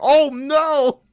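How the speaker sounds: shrill, very high, loud, caught-off-guard shocked shriek. Retelling a shocking death scene in the middle of the night: imitating own past scream. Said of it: "I remember screaming".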